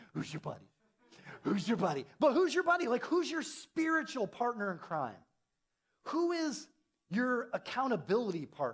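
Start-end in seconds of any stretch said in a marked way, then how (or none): 0.1-2.0 fatherly, dad-like tone. Asking who your buddy is, like a dad asking his little kid. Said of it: "like a dad asking his little kid".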